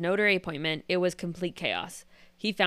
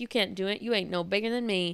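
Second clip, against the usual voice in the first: put-on Louisiana accent. Retelling a man's retort from a news story, Bobby's Louisiana accent. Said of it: "with the Louisiana accent".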